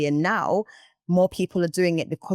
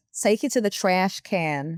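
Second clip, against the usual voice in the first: trying an American accent. Trying out an accent on the podcast, in a put-on american accent. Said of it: "my accent".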